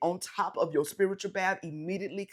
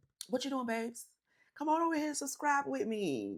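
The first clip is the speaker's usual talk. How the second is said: put-on little old lady voice, higher pitch; 7 semitones higher than usual. Video creator talking to viewers in a little old lady voice. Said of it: "my little old lady voice".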